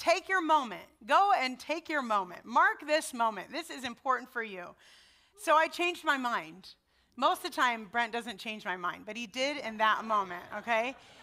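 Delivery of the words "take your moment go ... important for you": put-on Southern-accented voice throughout. Quoting Brent Clark urging her to attend graduation, Brent Clark's southern accent. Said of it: "in his southern accent".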